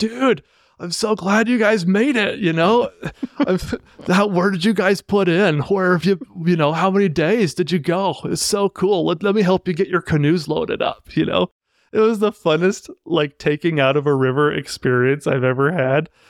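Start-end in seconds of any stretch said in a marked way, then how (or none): 0.0-11.1 laid-back, relaxed surfer dude voice. Retelling a canoe trip, the speaker quotes the man who met the group: Crush from Finding Nemo voice. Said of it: "his voice is like Crush from Finding Nemo".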